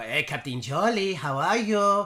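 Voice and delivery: sweet, little, high character voice. Retelling playing Senorita, greeting Captain Charlie, Senorita's sweet little voice. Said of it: "I put on his sweet little voice".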